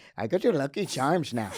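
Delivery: put-on stage Irish accent. Asked by the other speaker to do an Irish accent, answering in an Irish accent. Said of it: "do an Irish accent?".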